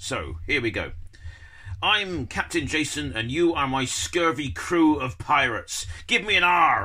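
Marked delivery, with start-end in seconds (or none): 1.8-6.9 talking like a ship's pirate captain. Demonstrating a pirate script for young schoolchildren, in a pirate voice. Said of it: "for me to talk like a pirate".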